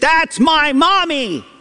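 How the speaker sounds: put-on very high shout of a small child calling out. Speaker describing how little children call out on seeing a parent, imitating a child shouting out. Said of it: "they just kind of shout out".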